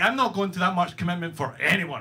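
ordinary talk

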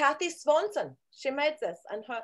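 put-on German-accented English. Describing the woman who made this, German accent. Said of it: "why am I doing a German accent?".

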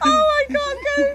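very high, words squeezed through hard laughter. Watching Joe on the bars, laughing hard. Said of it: "my gallbladder hurts too much for this laughing".

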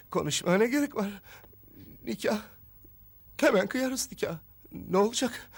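tearful. In a drama scene, answering a partner who wants to talk things over, crying. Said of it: "Ağlıyor musun yoksa?".

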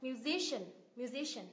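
musician with stress on the si syllable. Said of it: "nhấn vào âm tiết ngay trước đó".

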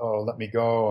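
ordinary talk

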